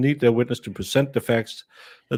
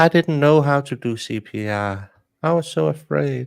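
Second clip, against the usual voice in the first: put-on very slow, small, tiny babyish voice; 2 semitones higher than usual. Continuing the imitation of how she might speak: imitating a tiny little baby voice. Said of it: "she's going to use her tiny little baby voice".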